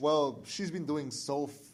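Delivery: drawn-out sarcastic tone. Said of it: "I'm being sarcastic".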